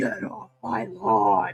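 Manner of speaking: low, scary, frightening voice. Imagining this voice coming out at a child: scary voice. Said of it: "having this voice come out at you?".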